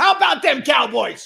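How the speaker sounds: very high, loud, raspy cheering voice. Working on your impressions and asking the listener who this is, do a Jimmy Johnson impression. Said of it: "I'm working on my impressions".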